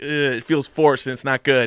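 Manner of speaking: plain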